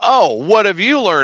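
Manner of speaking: put-on distinguished-sounding, dignified voice. Retelling a talk with Ray, imitating a distinguished-sounding voice. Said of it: "he's trying to sound all distinguished".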